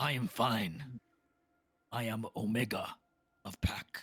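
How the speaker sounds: growled-out beast creature voice. Game master voices a beast answering a player's offer of help: growling beast voice. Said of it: "the beast growls in your direction as it says".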